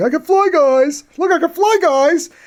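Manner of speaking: goofy, dim dummy voice, very high-pitched. Talking about monsters, showing the voice he always gives Rodan, goofy dummy Rodan voice. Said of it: "I always give kind of this goofy dummy voice".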